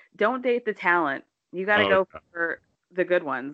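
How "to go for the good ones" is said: normal talking voice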